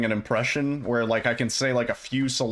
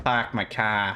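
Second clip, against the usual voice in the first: put-on Boston accent; 2 semitones lower than usual. Trying out an accent with a stock phrase: boston accent. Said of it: "if I could do a Boston accent".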